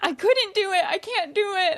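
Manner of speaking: mock tearful blubbering, pitched very high. Retelling a film scene where a character is immediately crying: imitating someone crying. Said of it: "immediately crying".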